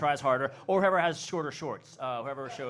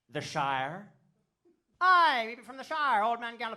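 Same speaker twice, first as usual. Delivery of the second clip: improvised put-on Irish accent, pitched up; 9 semitones higher than usual. Asked by a woman what part of Ireland they're from, speaker answers, put-on Irish accent. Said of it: "with my perfect Irish accent".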